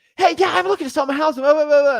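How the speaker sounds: very high, loud, fast, rattled-off excited chatter. Teaching how to mirror a seller, acting one out, fast and excited. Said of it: "if the seller is talking very fast and excited".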